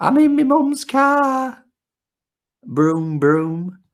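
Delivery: put-on Yorkshire accent, Huddersfield style. Retelling a viral video of a girl in her mum's car: imitating a Huddersfield accent. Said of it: "god-awful accent".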